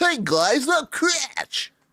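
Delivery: very high, somewhat loud nerdy voice. Speaker demonstrates the voice he wants the character to have: nerdy voice. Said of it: "I want him to be a nerd a nerd".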